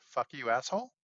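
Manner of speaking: acted flat deadpan delivery. Telling a story, acting out what the boy says to his mother, retelling a deadpan line. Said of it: "Just deadpan".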